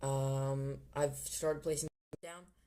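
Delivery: oddly emphatic, loud, slow announcing style.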